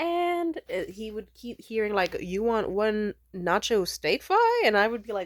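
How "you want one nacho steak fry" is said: put-on thick Spanish accent, slow and sing-song.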